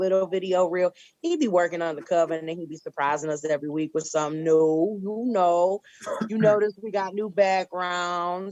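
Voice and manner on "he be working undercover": normal talking voice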